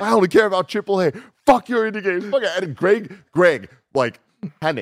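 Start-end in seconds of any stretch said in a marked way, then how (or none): 0.0-2.6 wild, high-pitched, unhinged ranting yell. Retelling how Mike came in ranting, the speaker quotes him: retelling Mike's shouting. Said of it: "I was just shouting".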